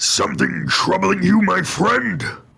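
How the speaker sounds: rough, creaky, raspy creature voice, a bit high. Asked for a sample of the voice while stuffy, Super Mutant voice. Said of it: "Could you give us a sample?".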